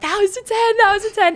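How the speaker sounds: acted, very high-pitched, indignant, outraged shriek. Recalling screaming after a floor routine was not given a ten, retelling a scream. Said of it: "I start screaming like".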